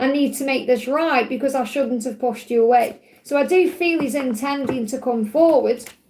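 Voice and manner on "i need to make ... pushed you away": ordinary delivery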